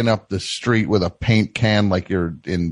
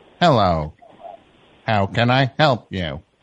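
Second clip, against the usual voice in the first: put-on robotic automated phone system voice. Playing a bank's phone robot in a skit with a caller: playing a phone robot. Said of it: "what you'd say to the robot".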